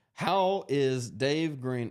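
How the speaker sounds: voice cracking and breaking, dragged out very slowly. Reading a viewer question aloud from the screen, voice cracking. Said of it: "Did my voice just crack?".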